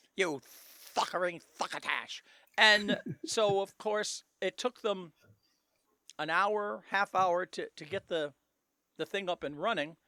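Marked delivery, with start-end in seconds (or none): 0.2-2.2 put-on cartoon duck voice, lower and faster. Showing how a man people joked had lost his dentures was talking, in a Daffy Duck voice. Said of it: "he's literally was talking like this".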